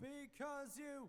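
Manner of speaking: very high, very soft, hushed screamo-style scream. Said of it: "the low screaming track".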